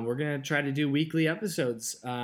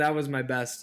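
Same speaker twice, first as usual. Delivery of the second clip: ordinary talk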